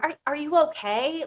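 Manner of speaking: fake concern. Describing a parent slowly turning kids against the other parent: imitating fake concern. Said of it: "like fake concern".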